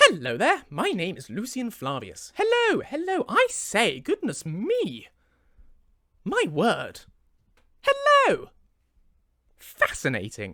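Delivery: loud, swooping, sing-song voice, "hello" stretched out. Warming up before recording, greeting party guests as Lucian: Lucian character voice. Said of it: "I need to get into character a little bit".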